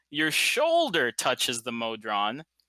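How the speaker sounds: shoulder stressed with a slow rising pitch. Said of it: "not your collar".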